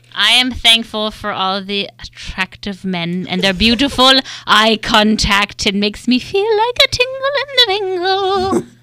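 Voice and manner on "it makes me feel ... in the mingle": put-on very high, sing-song, swooping old lady voice. Sharing what they are thankful for in the boy band world, sounding like an old lady. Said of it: "That sounded like an old lady at the end".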